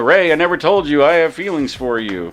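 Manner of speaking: ordinary delivery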